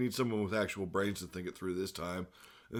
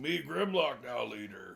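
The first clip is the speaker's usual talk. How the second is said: gritty, raspy, creaking robot-beast voice, rough and creaky; 2 semitones higher than usual. Retelling a cartoon fight scene, acting out Grimlock: Grimlock voice. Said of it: "Grimlock's like".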